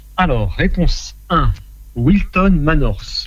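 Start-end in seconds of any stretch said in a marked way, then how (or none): 2.0-3.3 British English accent. Reading out quiz answers, giving a place name: English accent. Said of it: "avec mon superbe accent anglais".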